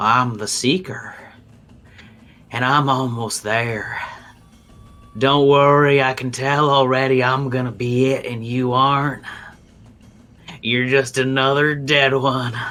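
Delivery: chittering, crackling, unsettling insect voice. A creature responds back in Goblin in an unsettling way: crackling bug-like voice. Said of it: "this cla- crackling like bug voice".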